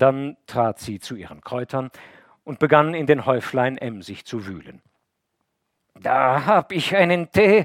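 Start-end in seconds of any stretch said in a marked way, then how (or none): 5.9-7.6 effortful, slow, raised groaning, pitched up. Reading a woman's line as she digs through her herbs for tea, groaning while searching. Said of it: "ächzte sie während des Suchens".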